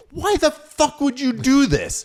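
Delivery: very high, loud, slow furious yelled cursing. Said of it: "just cursing at these people".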